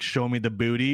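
ordinary talk

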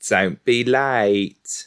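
character voice with "late" drawn out. Imitating how Giles sounds, telling someone not to be late: imitating Giles's voice. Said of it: "That's what he sounds like".

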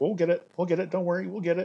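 high, light, smiling reassuring tone. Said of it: "always with a smile on his face".

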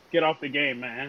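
ordinary talk

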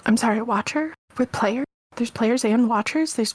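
intense, fervent hushed stage half-whisper. Voicing villagers murmuring about players and watchers: fervent hushed half-whisper. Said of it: "a whisper tone".

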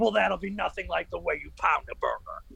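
terrible, rough put-on wrestler voice. Imagining a wrestler selling a grill: terrible Hulk Hogan impression. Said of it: "terrible Hulk Hogan impression".

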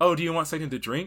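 put-on strong American accent, high, loud. Retelling a film scene where Margot Robbie switches from French nurse: very American accent. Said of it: "in a very American accent".

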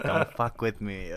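tough-guy voice like a 1940s movie gangster. Quoting a kid in a movie: imitating 1930s gangster movie delivery. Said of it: "he presents it as if it's, like, a nineteen thirties, forties gang-, gangster movie".

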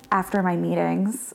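put-on deadpan voice. Reminding the listener how they answered a meeting invitation: imitating a deadpan reply. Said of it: "Like, deadpan".

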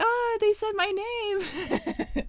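put-on very high, slow, drawn-out old-lady falsetto. Speaker reenacts her own reaction to hearing her name in a shout-out, falsetto grandma voice. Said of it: "I sound like a really falsetto grandma".

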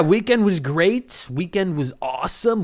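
douchey voice. Telling how the weekend went, sounding like a complete douche. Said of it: "I sound like a complete fucking douche".

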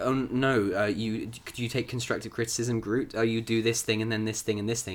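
ordinary talk

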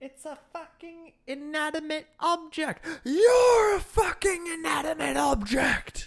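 loud, high-pitched delivery in a character voice. Performing a movie line when asked for the voice: Ralph Fiennes impression. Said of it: "with the voice and everything".

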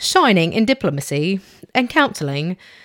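clumsy, really bad fake British accent. Reading a personality type description aloud, bad British accent. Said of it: "That was a really bad accent".

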